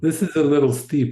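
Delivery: ordinary delivery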